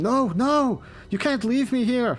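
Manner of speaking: very high, loud, frantic, panicked yelling. Game master voicing a scientist left behind on the other platform, panicked shouting. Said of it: "the panicked voice of the scientist ... as he's shouting".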